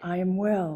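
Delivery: whispering. Leading a group affirmation repeated line by line: whisper. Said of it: "Now in a whisper".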